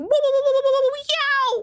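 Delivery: cry going very high. Imitating a game character getting thrown: Daisy voice getting thrown. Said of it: "I think this is Daisy, but she'll go like".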